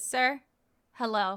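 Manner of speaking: put-on tired, dejected voice. Retelling asking a man on a plane for help: imitating own tired, dejected voice. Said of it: "so tired, so dejected".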